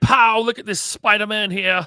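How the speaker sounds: loud, slow, horrible fake British accent. Speaker offering an example line, in a horrible British accent. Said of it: "That's a horrible British accent".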